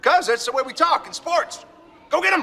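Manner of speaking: shouting. A father answers his son's question during sports, yelling. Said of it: "why are you yelling?".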